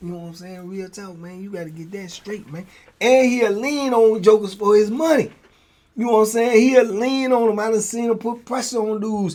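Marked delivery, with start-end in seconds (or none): 0.7-2.7 put-on smooth, low, suave talk, quieter. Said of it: "he talk like a pimp".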